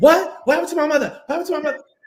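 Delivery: very high, rapid-fire, worked up, about to explode. Retelling how she reacts when her mother is mentioned: imitating Shaniqua ready to go off. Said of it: "ready to go completely off".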